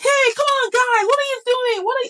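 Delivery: very high, playful, not-serious scolding shout. A mother acts out how she shouts at her children, retelling a shout. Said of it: "When I shout".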